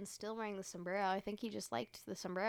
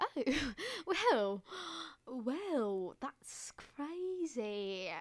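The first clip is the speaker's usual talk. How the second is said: fake put-on British accent, higher; 6 semitones higher than usual. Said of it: "talking in a British accent".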